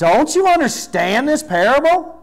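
perturbed, fed-up, exasperated, very high pitch. Reading a bible verse question about a parable, mock-exasperated. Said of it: "that's inflection I put. ... he's got to be getting a little perturbed with them".

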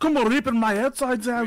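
very high-pitched, put-on Scottish accent. Repeating what another player just said: imitating a scottish accent. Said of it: "That sounded like he had a Scottish accent".

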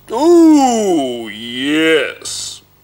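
loud, booming ogre voice, yes drawn out. Narrator reading the ogre's reply to a question, booming ogre voice. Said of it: "boomed the ogre".

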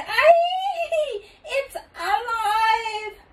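very high, shrieking scream, drawn-out aye. A narrator reads a lady's line in a story, screaming. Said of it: "The lady screamed".

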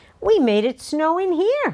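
crying out in a very high voice. Reading a classroom story, Sophie cries out to her teacher after making snowflakes. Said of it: "cried Sophie".

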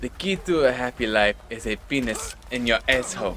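put-on French accent, soft. Quoting a movie scene about state troopers, in a Super Troopers French accent. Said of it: "when they were doing the French accent".

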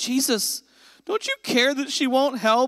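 pitch ride up at end. Voicing Martha the way the speaker hears her, with the uptick in her voice. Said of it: "like the uptick in her voice".

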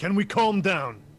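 loud, high-pitched, in-character shout. A player acting out their character's turn in a game, yelling. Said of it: "I'm gonna yell".

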